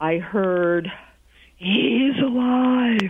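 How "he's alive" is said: pitched up, spoken out on a smoky exhale. Retelling a psychic's answer on the phone: imitating speaking on a smoky exhale. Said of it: "And on the exhale".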